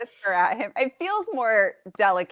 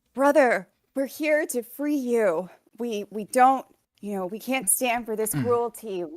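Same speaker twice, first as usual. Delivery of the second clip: whispering, pitched up; 3 semitones higher than usual. Speaking in character to a captive lion, urging it to escape: whispering to a lion. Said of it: "I'm going to whisper to the lion".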